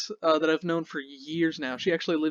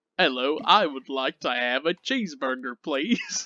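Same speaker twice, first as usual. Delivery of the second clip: funny, put-on attempt at an American accent; 3 semitones lower than usual. Describing how a man does an american accent, imitating it. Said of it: "his American accent is literally".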